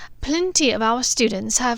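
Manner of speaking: plain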